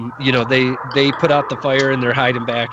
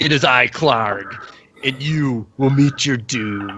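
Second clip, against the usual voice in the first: put-on monster voice. A game master voices a gigantic bugbear leaping onto a crate, in Clarg the bugbear voice. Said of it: "this gigantic bugbear jumps up on top of one of the crates and says".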